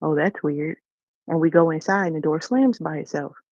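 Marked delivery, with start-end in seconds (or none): 0.0-0.8 put-on sarcastic delivery. Retelling what a daughter said as a door opened: imitating a sarcastic remark. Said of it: "she's very sarcastic".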